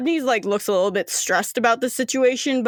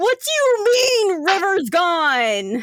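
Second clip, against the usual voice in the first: put-on outraged, furious, very high, "gone" drawn out; 9 semitones higher than usual. Voicing a character who throws something at the wall: really angry. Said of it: "chucks it at the wall really angrily".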